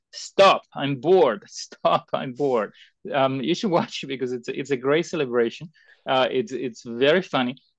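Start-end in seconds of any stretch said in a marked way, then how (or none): 0.1-2.7 imitated girl's slow, drawn-out screaming. Retelling how a young girl interrupts overtime speakers: imitating a girl screaming. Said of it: "just starts screaming".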